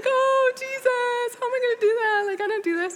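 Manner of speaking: acted, very high-pitched, flustered panicked cry. Recounting hanging up after agreeing to speak, retelling past panic. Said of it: "I'm panicking!".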